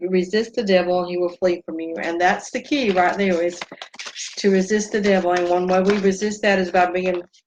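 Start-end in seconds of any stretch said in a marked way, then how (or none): none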